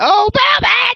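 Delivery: mock sudden scream, very high-pitched. Making up a scream for the recap: Angelina Love screaming impression. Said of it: "I just make up a scream".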